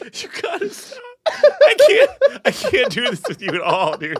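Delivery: very high, helpless laughing through tears. Reacting to the other speaker's sauerkraut jokes, crying with laughter. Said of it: "I'm crying so hard".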